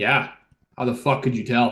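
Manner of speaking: thoroughly unimpressed, not buying it. Answering a tied-up companion's question in character: super unimpressed. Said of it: "super unimpressed".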